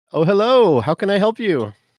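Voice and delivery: overly friendly, very high. Playing Twillin, embarrassed at forgetting, greeting someone in her overly friendly voice. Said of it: "put on her best, you know, overly friendly voice".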